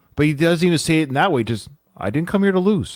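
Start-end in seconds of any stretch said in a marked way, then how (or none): 2.0-3.0 cool, businesslike, calm, matter-of-fact, slightly high. Showing how the boxer says his line: imitating a matter-of-fact calm delivery. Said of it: "almost matter-of-fact calm".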